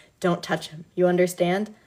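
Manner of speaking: ordinary delivery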